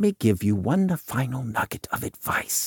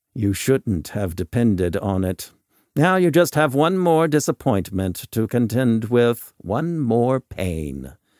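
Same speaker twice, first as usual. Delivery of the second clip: plain reading voice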